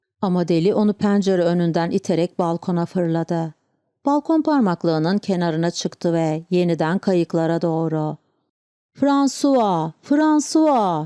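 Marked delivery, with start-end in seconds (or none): 8.9-11.1 crazed, high-pitched, madman-like shouting. Narrator reading the madman calling a name from the balcony, shouting. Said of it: "diye bağırdı".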